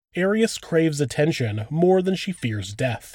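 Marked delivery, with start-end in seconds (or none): none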